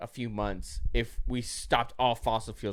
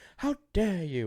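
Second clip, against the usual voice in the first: put-on Swedish teen girl accent, higher pitched; 6 semitones higher than usual. Mocking climate activists' response, doing a Greta Thunberg impression. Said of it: "Usually it's me with the impressions. That's pretty good".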